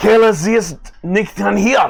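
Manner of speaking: shrill, very high-pitched, loud hollering. Voicing a character who ran out of the room: loud yelling. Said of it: "you hear him rather loudly yelling".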